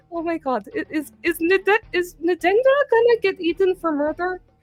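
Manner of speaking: stumbling, high, panicky mumbling under the breath. Voicing a character who panics about a friend: panicked muttering to herself. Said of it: "muttering to herself, like, and kind of panicking".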